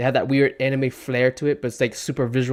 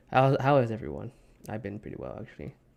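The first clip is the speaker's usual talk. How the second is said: exhausted, worn-out sounding voice; 3 semitones lower, 6 dB quieter than usual. Greeting everyone after only three hours of sleep, exhausted. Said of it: "I sound exhausted because I am exhausted".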